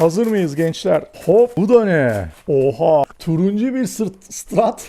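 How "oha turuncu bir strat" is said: overwhelmed, excited, lost for words. Opening a package and finding an orange strat, speechless with excitement. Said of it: "Konuşamadım heyecandan".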